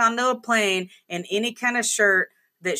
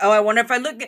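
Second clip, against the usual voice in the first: mock sarcastic, smart-aleck tone. Imagining a passenger's smart-ass comments about a shirt: imitating sarcastic smart-ass comments. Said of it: "smart ass comments like".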